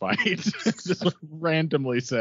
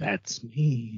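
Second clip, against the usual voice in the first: very quiet, hushed voice. Retelling how someone answered when his name was introduced, very quiet. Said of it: "He said it very quietly".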